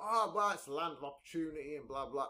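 ordinary talk

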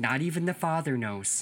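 folksy, put-on Midwestern accent. Quoting a line spoken by a lady in something they watched, Midwest accent. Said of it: "Midwest accent".

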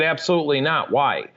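normal talking voice

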